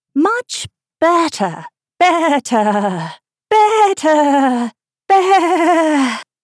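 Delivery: swooping pitch climbing into squeak, ending in bleat. Narrator reading the Queen's words as Alice follows her: voice rising to a squeak. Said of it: "her voice rising to a squeak as she went on".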